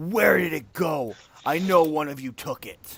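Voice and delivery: huge, loud, bellowing dragon yell. Narrating a scene, voicing a large snow dragon above the village, yelling.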